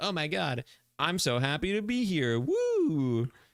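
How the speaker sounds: put-on very slow, swooping, innocent childlike voice, woo stretched. Explaining why they won't play Viscous, imitating the character: childlike Viscous impression. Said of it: "way too childlike".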